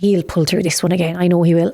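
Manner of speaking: normal talking voice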